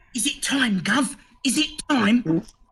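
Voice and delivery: rat character whisper. The narrator voices the rat Radicus, who speaks to the player, Radicus whispering. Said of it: "Radicus looks at you and he whispers".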